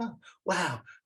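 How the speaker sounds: put-on very high, girly movie-star voice. Retelling an actress accepting her first Emmy, in a girly movie-star voice. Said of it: "Pretty much like she would be in any of the movies".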